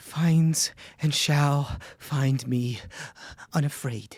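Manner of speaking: pained, strained words through clenched teeth. In a tabletop game, voicing a character's line of mantra, through gritted teeth in pain. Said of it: "through gritted teeth and pain".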